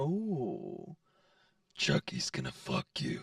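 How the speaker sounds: creepy, scary, breathy, whispered put-on voice. Asked for the rated R version of the line, say it in a scary voice. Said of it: "That's just like some scary voice".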